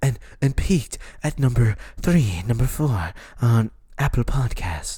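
public-radio host announcer voice, reading style. Mimicking a man plugging his podcast chart spot, NPR voice. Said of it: "why is he doing the NPR voice? Listen. He's like".

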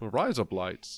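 Australian accent with harsh, razor-edged vowels. Showing how a phrase sounds said in an Australian accent. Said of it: "razor blades in Australian".

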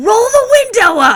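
very high, loud, blurted-out shout. Retelling a moment of being unable to hold in laughter any longer, retelling a yell. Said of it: "you just yell that out".

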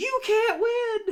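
shrill, very high, piercing cry. Picturing the heavyweight champion's glamorous wife speaking: shrill voice. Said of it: "her shrill voice going".

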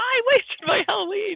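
put-on very high, angry little-girl shout. Recalling the end where Sally gets mad at him: imitating Sally yelling. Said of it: "She's yelling at him".

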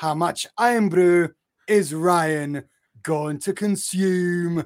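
put-on loud Scottish accent. Narrating a housemate's shopping task, the speaker switches into a Scottish accent. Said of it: "He turned Scottish after he said iron brew".

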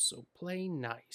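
creepy demented toy voice. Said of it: "as if he's a demented toy".

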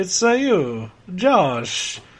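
put-on cartoon Italian voice. Repeating the greeting to the co-host, in the famous 'Japanese Italian' impression. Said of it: "my little impression of the world's most famous Japanese Italian".

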